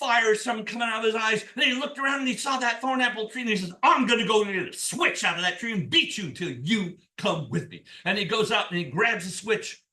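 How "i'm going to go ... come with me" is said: big, booming, deep devil voice. Telling a folk tale, voicing the devil come for Jack: big deep devil voice. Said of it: "Scratch has a big, deep voice".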